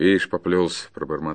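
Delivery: plain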